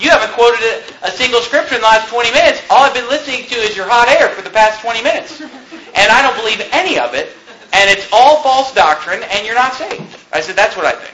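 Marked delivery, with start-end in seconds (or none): none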